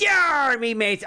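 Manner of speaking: very high, put-on pirate accent. Opening the podcast episode, a host greets the listeners in a pirate accent. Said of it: "I wanted to do the voice".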